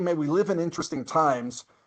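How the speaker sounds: plain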